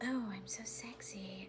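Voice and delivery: put-on whispery voice. Complaining about a show's actors, the speaker mocks how they talked, imitating a whispery voice. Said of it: "talk in this whispery voice, like like this".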